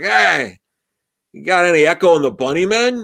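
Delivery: play-acted mild call-out. Retelling how a man shouted a music request, imitating someone shouting. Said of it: "And he just shouts".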